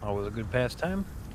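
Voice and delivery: low, soft, dry, sarcastic delivery. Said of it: "that was sarcasm".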